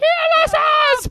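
very high, shrill, shrieked scream. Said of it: "I'll even scream it as I'm doing it".

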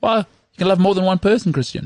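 exaggerated Danish accent. Retelling a scene, the speaker voices the wife's reply: danish accent. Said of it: "She's doing it in a Danish accent".

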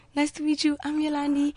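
squeaky, piping, high-pitched little voice. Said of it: "with her squeaky voice".

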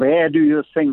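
put-on German accent. Retelling what a law professor said to a student: German accent. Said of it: "he had a German accent, by the way".

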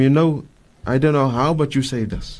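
plain

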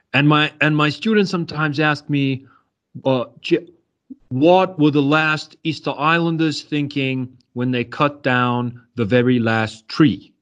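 put-on Boston-accented speech. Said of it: "kind of some Boston accent".

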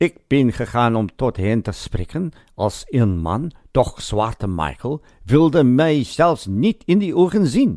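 clumsy, bad put-on Dutch accent. Narrator quotes the Transvaal Deputy President addressing the burghers, in a bad Dutch accent. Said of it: "Sorry about the bad Dutch accent".

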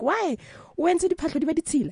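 high, fast yelling mother voice.

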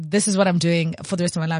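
normal talking voice

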